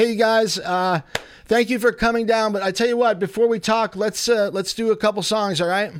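shouting. Show host calls to the band in the other room, yelling to another room. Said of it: "I'm yelling because they're in the other room".

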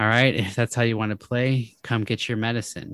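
ordinary delivery

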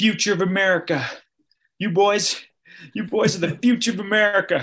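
put-on, high, deeply moved voice close to tears. Retelling what a hiker said to runners passing by: imitating a moved man near tears. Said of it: "almost started crying".

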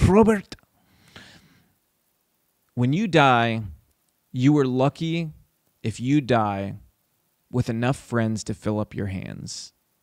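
put-on thick, heavy Cuban accent. Speaker quotes what a man once told him, in a thick cuban accent. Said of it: "he had this really thick Cuban accent".

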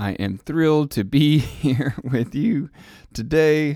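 voice breaking. Podcast host welcoming listeners at the start of an episode, voice cracking. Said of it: "The voice is cracking already".

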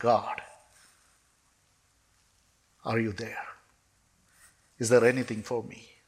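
acted-out crying. Recalling a desperate moment, kneeling down and crying out to god: retelling a tearful prayer. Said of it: "I knelt down and I cried unto God".

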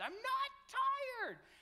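put-on child screaming tantrum, high, loud and shrill.

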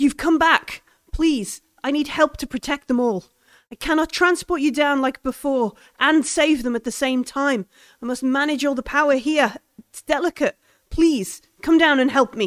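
fast, anxious, panicked voice full of hope. Game master voicing the alien calling out to the players, hopeful and panicked. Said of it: "It sounds hopeful and panicked".

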